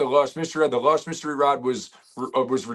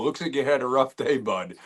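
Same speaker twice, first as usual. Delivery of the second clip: usual speaking voice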